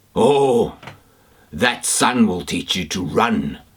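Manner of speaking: hoarse, rough dog voice. Reading a story aloud, voicing the dog talking to the snowman in a rough, hoarse dog voice. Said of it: "Much rougher, hoarser voice".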